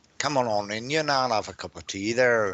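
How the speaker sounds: put-on Belfast accent. Reading out listeners' names, the speaker greets one from Belfast in a put-on Belfast accent. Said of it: "can I put my Belfast accent on".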